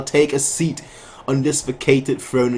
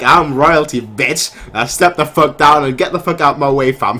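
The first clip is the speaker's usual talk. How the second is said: play-acted loud, cocky, smug royal arrogance; 2 semitones higher, 6 dB louder than usual. Retelling what a smug character says while taking the throne: imitating an arrogant taunt. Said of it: "he's like".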